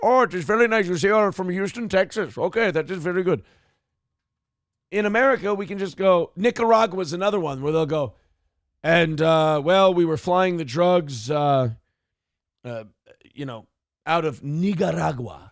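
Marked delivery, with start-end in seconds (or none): 0.0-3.4 put-on Pakistani-accented English. Comparing greetings abroad, the speaker imitates how Pakistanis talk, in a Pakistani accent. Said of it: "They talk in their fucking Pakistani voice".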